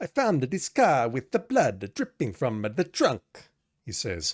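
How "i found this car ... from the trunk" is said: heavy, exaggerated, laid-on Italian accent. Narrating a game scene, voicing Officer Gillespie in his heavy Italian accent. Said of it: "In his heavy Italian accent".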